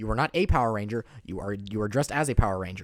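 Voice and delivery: loud blunt matter-of-fact voice. Imagining handing out Halloween candy: Ben Shapiro impression. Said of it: "Ben Shapiro giving out Halloween candy".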